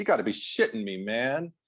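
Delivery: normal talking voice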